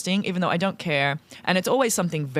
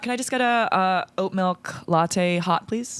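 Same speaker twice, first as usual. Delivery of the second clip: slow, put-on American accent. Ordering an oat milk latte in a coffee-shop role-play, American accent. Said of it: "I will talk in an American accent".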